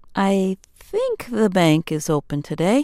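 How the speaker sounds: doubtful, uncertain, hesitant delivery. Second example sentence in a lesson on hearing uncertainty: far less confident. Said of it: "you hear far less confidence".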